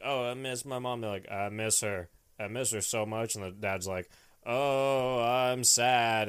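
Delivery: mock monotone delivery, like kids. Retelling how the kids in a movie talked: imitating monotone kids. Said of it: "all the kids sound really monotone".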